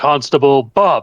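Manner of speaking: loud voice. Banging a mug on the table, calling out to the constable: loud voice. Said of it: "using her loud voice".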